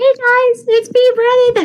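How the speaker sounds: put-on very high, squeaky little-kid voice. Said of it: "is it like squeaky voice, Brennan?".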